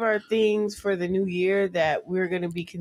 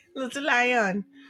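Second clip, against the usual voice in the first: put-on Jamaican accent, pitched up; 5 semitones higher than usual. Host speaking to a listener on air, in a put-on jamaican accent. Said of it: "that's my Jamaican accent".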